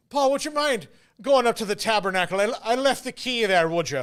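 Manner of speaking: put-on Irish accent. Recalling the priests from childhood, the speaker imitates one of them: irish priest accent. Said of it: "my Irish accent is maybe my best one".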